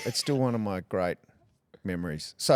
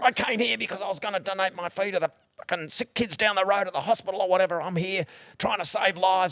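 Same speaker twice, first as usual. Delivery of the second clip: mock wild, furious, frothing-at-the-mouth rant; 9 semitones higher than usual. Retelling how Rex Hunt reacted to a heckler, retelling his frothing rant. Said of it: "went on this like frothing at the mouth thing".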